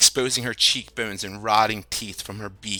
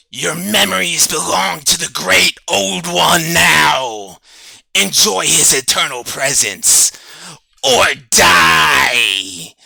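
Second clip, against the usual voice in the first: very loud, high, rasping monster screech; 7 semitones higher, 10 dB louder than usual. Narrator voicing a creature as it lunges closer, in a screeching creature voice. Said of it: "he screeches out".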